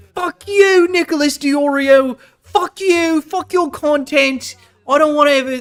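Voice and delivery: angry put-on British voice drifting into Australian accent. Imitating a streamer's angry rant: imitating Chud Logic, British voice drifting Australian. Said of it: "I keep doing Australian".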